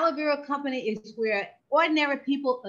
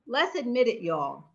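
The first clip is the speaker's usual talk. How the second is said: Southern accent. Suggesting healthy holiday gifts to viewers: Southern drawl. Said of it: "that's my Southern drawl".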